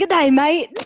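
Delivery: put-on Australian accent. Asked to do Australian, the speaker imitates Australians, in an Australian accent. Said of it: "Australian people always are like".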